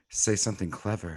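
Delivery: whisper. Playing a character whispering encouragement into another character's ear: whispering in character. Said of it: "I'm gonna whisper in his ear".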